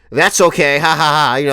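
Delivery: easy, slow delivery ending in a "ha ha ha" laugh. Retelling what a woman said back to the speaker; imitating her laugh. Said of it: "with the fucking laugh and shit".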